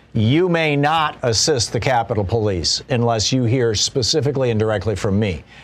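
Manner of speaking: plain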